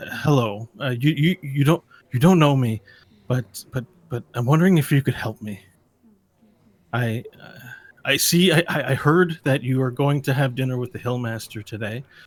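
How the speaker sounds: speaking in a hush. Narrating a game, voicing a woman who approaches a player to ask for help, hushed tone. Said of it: "she speaks in a hushed tone and says".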